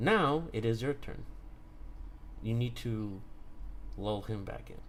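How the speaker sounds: very calm, serene, steady, composed voice. Tlatoni, in animal form, puts a hand on Arya: very calm voice. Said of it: "in a very calm voice".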